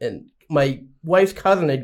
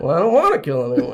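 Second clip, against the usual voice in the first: dry, comic sitcom delivery. Retelling being told horror needs killing, answering in a Jerry Seinfeld voice. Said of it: "I had like the Jerry Seinfeld voice".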